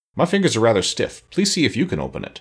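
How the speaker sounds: ordinary delivery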